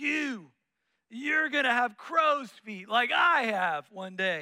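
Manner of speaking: raspy, rasping curmudgeon smoker's voice. Retelling how a teacher criticized students in class, imitating a raspy voice. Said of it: "in that raspy voice".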